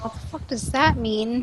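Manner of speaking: muttered under her breath. Voicing a character reacting to a threat: muttered under her breath. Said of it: "she says under her breath".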